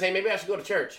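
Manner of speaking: ordinary delivery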